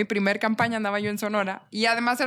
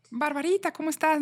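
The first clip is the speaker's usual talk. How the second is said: high, overly kind, fake-nice passive-aggressive tone; 6 semitones higher than usual. Recalling a phone call, the speaker quotes a woman's greeting; mock very kind, passive-aggressive. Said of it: "muy amable, muy pasivo-agresiva".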